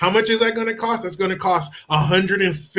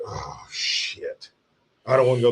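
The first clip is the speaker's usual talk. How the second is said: slow, breathy, grudging, unwilling tone, acted out; 8 semitones lower, 4 dB quieter than usual. Acting out a parent asked to volunteer for a weekend trip: imitating a reluctant dad. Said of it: "You want the dad who's like".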